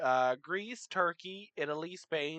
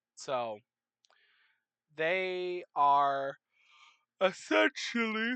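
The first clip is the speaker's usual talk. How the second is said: speaking through a yawn. Explaining in a video recorded at seven thirty p.m., yawning while talking. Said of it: "Sorry, yawning".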